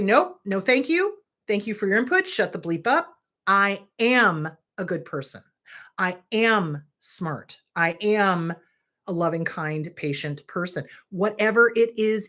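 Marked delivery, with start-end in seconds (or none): none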